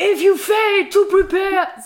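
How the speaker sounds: acted, very high, loud, slow, drawn-out booming voice. Mimicking how a friend always says this in trainings, loud, mimicking a friend. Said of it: "Und du sagst das immer so laut. ... So ungefähr sagst du das".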